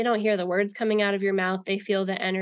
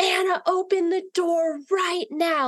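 put-on shrill, high, all-out top-of-lungs screaming; 10 semitones higher than usual. Retelling banging on a locked bathroom door: retelling own screaming. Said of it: "screaming at the top of my lungs".

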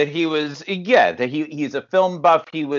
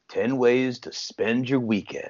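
mock menacing villain tone, quieter; 3 semitones lower, 5 dB quieter than usual. Quoting the villain reading the paper: imitating the villain's menacing tone. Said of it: "In his menacing tone".

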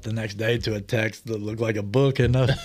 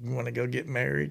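put-on soft little Southern accent; 8 dB quieter than usual. Retelling how she asked him something one morning at the cabin, in her little southern voice. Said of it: "In her little southern voice".

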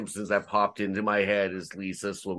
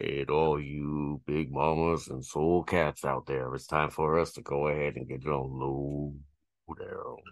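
deep, low, slow, rolling announcer voice; 5 semitones lower than usual. Explaining which announcer voice is wanted, doing the Soul Train announcer voice. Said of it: "the guy that does like the like beginning of Soul Train".

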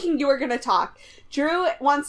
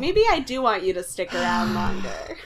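plain

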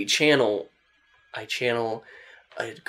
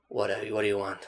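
put-on voice of an older man, quieter; 5 dB quieter than usual. Voicing a channeled spirit speaking through a character: older male voice. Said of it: "sounds like an older male".

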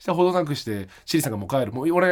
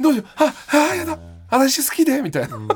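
put-on excited fluster, much higher pitch, louder; 12 semitones higher, 5 dB louder than usual. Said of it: "興奮しちゃって".

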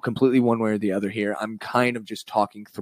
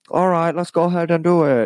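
put-on high-pitched little kid voice; 7 semitones higher, 4 dB louder than usual. Acting out children playing pretend: Chris D'Elia little kid voice. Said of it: "I'm doing Chris D'Elia's little kid voice".

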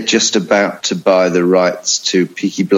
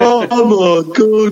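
botched put-on Birmingham accent, very high; 14 semitones higher than usual. Retelling how a man attacked on the pitch by a fan spoke, imitating a Brummie accent. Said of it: "I can't do the accent".

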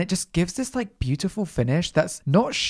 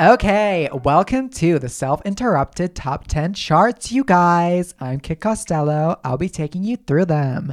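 slow, fake American accent, show host style; 4 dB louder than usual. Welcoming listeners to the Top Ten Charts: put-on American accent. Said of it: "I need to stop doing this American accent".

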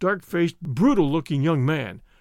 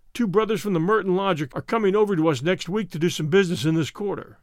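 plain

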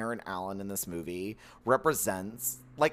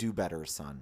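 calm, soft, low-key condescending tone; 8 semitones lower, 5 dB quieter than usual. Imagining how Harrison Ford would talk in bed: imitating Harrison Ford calmly belittling. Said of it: "he would just calmly belittle me".

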